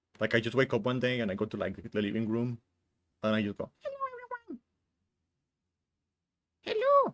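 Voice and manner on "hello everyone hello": odd, tiny, very high-pitched little voice. Describing her random voices, she shows greeting everyone in the living room in a weird little voice. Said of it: "weird little voices that come out at random".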